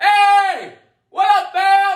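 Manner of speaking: loud, big, very high, drawn-out call. Showing how loud people talk: showing a loud voice. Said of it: "I'm loud".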